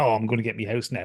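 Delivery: mock-gleeful grinning man voice. Retelling a husband grinning while his wife looks heartbroken: mock-gleeful grinning. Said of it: "he's like grinning like an idiot".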